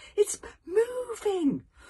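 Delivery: very high-pitched voice, stammering and stuttering. Reading a story aloud, the narrator voices Hiccup's line, stuttering. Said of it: "stuttered Hiccup".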